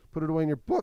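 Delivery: voice cracking mid-line, up high and loud. Giving instructions after asking for questions, voice cracking. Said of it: "My voice cracked there for a moment".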